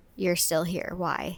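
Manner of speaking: mock-quiet remark muttered under the breath. Recapping a scene, quoting a man who finds a woman still at his house, under his breath. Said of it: "like kind of under his breath".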